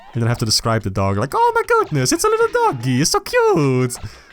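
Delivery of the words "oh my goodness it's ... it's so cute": very high, gleeful cartoon gushing with big pitch swoops. Describing how they talk about dogs seen from a car, in a Mario voice. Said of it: "in a Mario voice".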